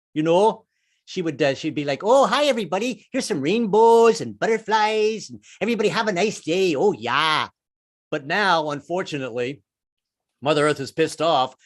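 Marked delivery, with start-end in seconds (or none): 2.1-7.5 put-on nice Minnesota accent at a higher pitch. Voicing Mother Earth back when she was nice, like a nice Minnesota lady. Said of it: "that nice Minnesota lady".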